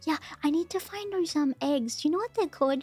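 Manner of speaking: half-whispered, breath only, no voice. Thanking the guests for coming, the speaker has to half-whisper: half-whispering. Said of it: "I have to whisper".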